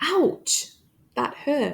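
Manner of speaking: short break after ouch. Showing the pause after an exclamation, brief pause after ouch. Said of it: "Again, we're having a brief pause".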